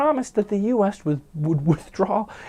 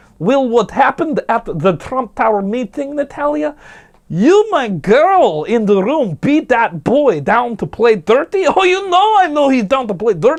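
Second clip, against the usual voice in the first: bad fake Russian accent, "girl" drawn out; 3 semitones higher, 7 dB louder than usual. Acting out an imagined check-in with the Kremlin about the Trump Tower meeting, awful Russian accent. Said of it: "my Russian accent is awful".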